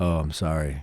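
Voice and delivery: very low, quiet, uninflected deadpan monotone. Told how to fix your impression, try again with no inflection, mouth not moving. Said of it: "need to not move your mouth and don't show inflection".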